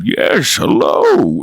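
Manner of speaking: slow, unhurried, plodding tree-man creature voice. A player shows how their character spoke on their turn: slow Yarrick voice. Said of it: "this slow kind of talking".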